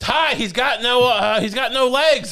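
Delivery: play-acted shout, high and drawn out. Telling a story about a heckler fight, imitating someone yelling out from the stands. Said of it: "someone yells out".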